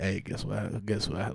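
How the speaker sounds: soft, hushed whisper under the breath. Retelling a cousin's phone call in bed: imitating someone whispering.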